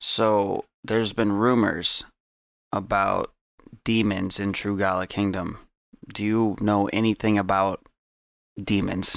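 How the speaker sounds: speaking in a hush. In a role-play scene, a character questions another character: hushed voice. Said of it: "I'm talking kind of like a hushed voice right now".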